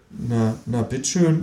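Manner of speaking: ordinary delivery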